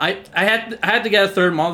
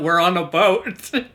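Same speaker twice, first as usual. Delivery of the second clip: ordinary delivery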